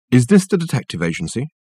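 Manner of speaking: ordinary delivery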